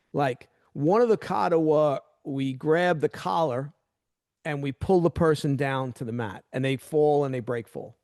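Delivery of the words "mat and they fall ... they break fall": normal talking voice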